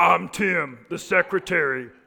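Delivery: low and slow voice. Urging married listeners to stay faithful, playing Tim the secretary in a deep voice. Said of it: "With a deep voice".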